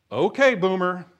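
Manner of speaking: dismissive, sarcastic tone. Describing how a younger person answers an older person, mock-sarcastic. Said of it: "sarcastically saying".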